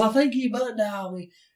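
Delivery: put-on hardcore heavy Southern accent, very high-pitched. Retelling a woman calling back about a butt dial, in a hardcore southern accent. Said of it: "she got really hardcore Southern accent".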